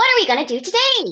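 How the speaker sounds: very high, squeaky cartoon character voice. Showing how a cartoon teddy bear angel sounded: squeaky cartoon character voice. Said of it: "a proper squeaky cartoon character".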